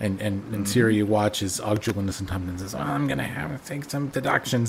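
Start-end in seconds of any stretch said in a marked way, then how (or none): 2.7-4.7 gritty, raspy put-on voice, pitched higher. Retelling what Tompkins says in a scene, done as a Donnie impression. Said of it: "That's my impression of Donnie as Og".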